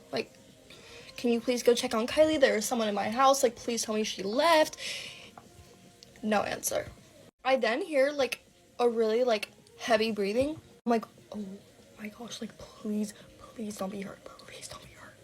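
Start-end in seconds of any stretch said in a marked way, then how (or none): 11.3-15.1 mock-scared, frightened, much quieter voice. Retelling hearing an intruder in the house, acting out a scared plea. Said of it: "I was so scared".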